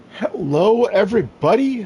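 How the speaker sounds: very high voice, breaking and cracking. Opening a video, the host greets everybody: voice cracking. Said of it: "Sorry, voice crack there".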